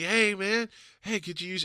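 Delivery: bright, friendly tone. Speaker retelling how a homeless man approached him at a gig, imitating a friendly, nice tone. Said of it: "Nice as could be".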